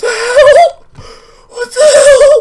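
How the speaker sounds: very high, loud, slow, freaked-out shriek.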